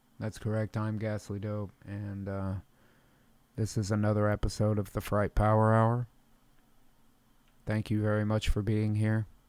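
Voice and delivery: totally calm voice. Host welcomes listeners to the comedy show, keeping it totally calm. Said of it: "It's going to be a totally calm show".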